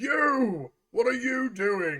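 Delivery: loud, high guard's shout. Voicing a guard who catches the party from behind: guard shouting. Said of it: "you hear a guard quickly shout".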